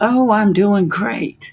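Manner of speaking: very high, slow, bright, mock chipper voice. Retelling a Mother's Day phone call, imitating mom's chipper tone. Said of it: "her tone was very chipper".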